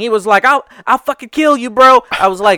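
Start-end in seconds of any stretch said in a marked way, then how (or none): 0.5-2.0 nonstop high, loud shouting. Retelling what the kid said during a game robbery: imitating someone yelling. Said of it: "yelling everything".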